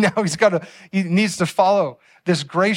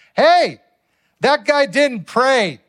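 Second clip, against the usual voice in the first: mock kid's high, drawn-out yell; 6 semitones higher, 3 dB louder than usual. Retelling how a son pointed at a man sitting alone: imitating someone yelling. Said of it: "and he yells".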